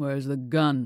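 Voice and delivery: distrustful, wary, suspicious tone. Narrating a man demanding to know where the gun is, suspicious. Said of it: "He asked suspiciously".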